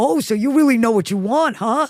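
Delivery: swaggering, macho tough-guy voice. Retelling what crew members say to a director: imitating a macho male gaffer. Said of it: "a few male macho gaffer being like".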